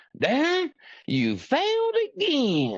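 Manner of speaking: thick, raging Georgia drawl, very high, drawn out. Retelling how a man told Darren he had failed, in a raging Georgia accent. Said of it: "he has a raging Georgia accent".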